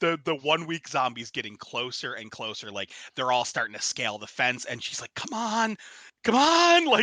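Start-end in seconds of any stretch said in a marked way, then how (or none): 5.1-6.8 mock frantic, panicked, very high and very slow. Pitching a scene where she waits as zombies close in: imitating someone freaking out. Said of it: "she's freaking out".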